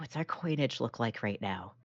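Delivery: very quiet, hushed whisper. Playing a character who whispers a question about coin: whispering in character. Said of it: "whispers into books".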